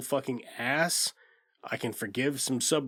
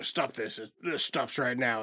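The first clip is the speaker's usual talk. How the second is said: put-on stern old man voice, faster. Retelling a film scene, voicing the grandpa scolding, imitating a stern old man. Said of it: "stern old man".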